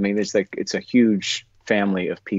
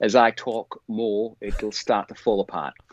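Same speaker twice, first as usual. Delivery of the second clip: put-on Australian accent, attempted on the spot. Trying out an accent for another speaker: australian accent. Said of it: "experience doing Australian".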